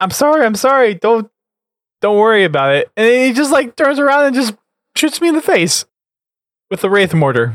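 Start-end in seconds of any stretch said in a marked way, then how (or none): 0.0-2.9 re-enacted yell, much higher, slower. Recounting what they yelled just before being shot in the face, retelling a yell. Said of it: "I was yelling".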